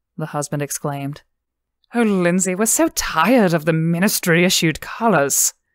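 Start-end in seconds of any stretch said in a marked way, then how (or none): 1.9-5.5 breathless, louder. The woman speaks to Lindsey beside her husband, breathless. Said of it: "the woman said breathlessly".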